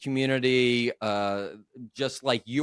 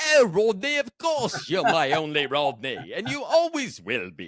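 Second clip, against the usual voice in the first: strained, squeezed put-on voice with swooping pitch; 5 semitones higher than usual. Acting out a reply to Rodney had he said no: constipated Cary Grant voice. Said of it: "I think I could do your voice".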